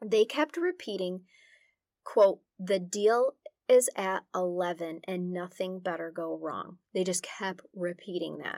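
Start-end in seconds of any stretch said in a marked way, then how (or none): none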